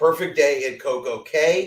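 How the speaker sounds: Cay pronounced to rhyme with day, rising.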